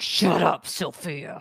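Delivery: possessed demon voice with spitting. Retelling a reply to Sophia, in a demon voice. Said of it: "Demon voice".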